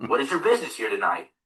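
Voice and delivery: put-on solemn, grave, dead-serious voice. Retelling how a girl's father questioned him: imitating a very serious tone. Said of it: "this guy was serious".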